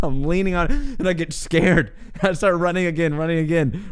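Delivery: laughing through the speech.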